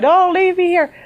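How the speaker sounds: mock, very high, pleading, wailing crying scream. Retelling screaming to the sky on a country road: reenacting screaming. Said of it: "screaming in the middle of the sky".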